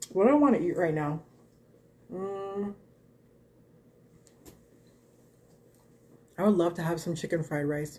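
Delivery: talking with mouth full while eating. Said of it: "not to talk with my mouth full".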